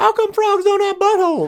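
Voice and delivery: put-on little girl's Southern accent. Retelling a little girl's question about frogs: imitating a little girl's southern accent. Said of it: "she's got this unbelievable Southern accent".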